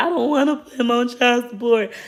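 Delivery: acted, high, tearful boohoo sobbing. Retelling her past self at the child support office, retelling her own crying. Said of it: "I'm boohoo crying".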